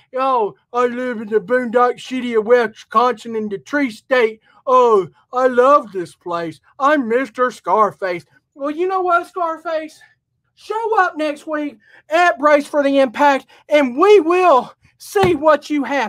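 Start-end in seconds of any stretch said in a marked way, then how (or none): 0.1-8.2 taunting, derisive voice rubbing it in. Mocking a rival before next week's show: mocking Scarface imitation. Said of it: "whatever you wanna call yourself now".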